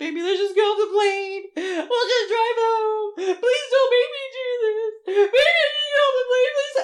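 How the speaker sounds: very high, loud, crying, tearful pleading tone. Retelling begging to get off a plane, acting out tearful begging. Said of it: "I'm begging Bruce to let me off the plane".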